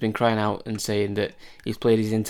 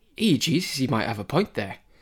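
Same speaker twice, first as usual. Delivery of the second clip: bad put-on northeast US accent; 3 semitones higher than usual. Retelling how Steve Bruce reacted to a suggestion, the speaker does a bad northeast accent. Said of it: "that is the worst northeast accent I've heard in my life".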